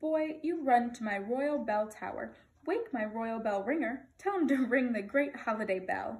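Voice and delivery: plain reading voice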